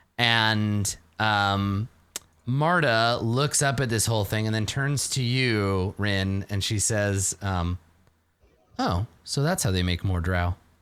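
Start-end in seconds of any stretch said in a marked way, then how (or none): 8.8-10.6 offhand, tossed-away side remark. Voicing a character's remark to another character: said quietly. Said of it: "She said it quietly".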